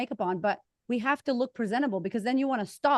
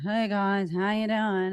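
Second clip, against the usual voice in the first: fake sleepy, low-energy, low voice; 3 semitones higher, 6 dB louder than usual. Showing the kind of greeting she might see from Jane, sleepy and low. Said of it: "sleepy and low".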